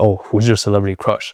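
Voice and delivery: very nonchalant, offhand, laid-back delivery. Showing how to ask a date a question: very nonchalant. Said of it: "Just say it very nonchalantly".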